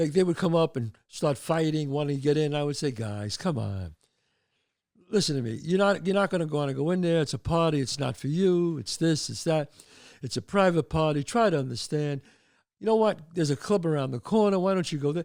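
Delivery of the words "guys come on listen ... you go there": ordinary talk, nothing marked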